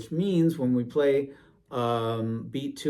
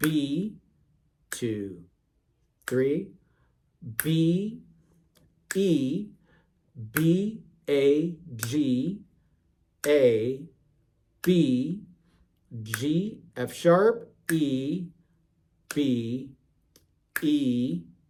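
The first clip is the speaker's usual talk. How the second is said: words drawn out very, very slowly. Saying note names aloud in rhythm for learners: saying notes very, very slowly. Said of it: "say the notes out loud very, very slowly".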